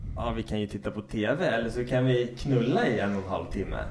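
normal talking voice

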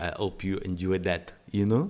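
speaking in a put-on French accent. Retelling what was said to the kids after dropping them off: French accent. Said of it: "in my French accent in front of them said".

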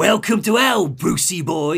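put-on Cockney-like accent. Retelling a character's taunt to bruce, in a cockney accent. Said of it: "He's got like a Cockney sort of accent".

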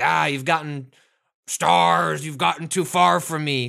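monster voice, pirate-like. Describing a game where Nemesis chases them, doing a piratey-ish Nemesis voice. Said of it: "Kinda sounds piratey-ish the more I try to do this voice for Nemesis".

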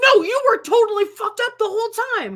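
put-on shrill scream, very high and loud. Retelling a documentary scene where a dad argues: imitating someone screaming. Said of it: "He's, like, screaming at her".

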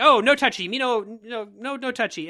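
mock spoiled, high, bratty childish whine. Retelling a movie trailer moment where a character is touched: imitating a bratty, childish line.

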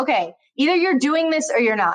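ordinary delivery

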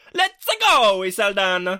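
belted out high and full of gusto. Pitching a pun nickname for an actor, in Mario voice with gusto. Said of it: "It'll only work if you say it with gusto, though. ... I'm feeling like Mario on that".

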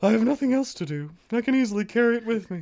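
very high cartoon bear voice. Reading a story aloud, trying his best at Pooh's line: Winnie the Pooh voice. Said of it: "That was my best Winnie the Pooh".

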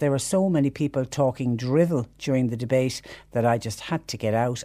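ordinary delivery

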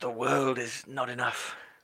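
soft voice with a very English accent. Asked to say the film title in the style of Pierce Brosnan. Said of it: "say it in the style of Pierce Brosnan".

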